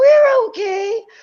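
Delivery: shrill squeak, very high and loud. Describing a guy on the ground with his hands up, imitating his voice going way up. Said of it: "His voice goes up like six octaves".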